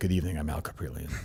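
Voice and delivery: low, grave, sober, subdued weatherman voice. Recalling a weatherman on nine eleven, imitating Al Caprillion's serious voice. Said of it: "had his serious voice that day".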